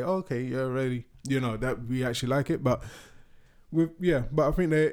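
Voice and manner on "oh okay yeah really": usual speaking voice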